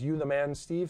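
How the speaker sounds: normal talking voice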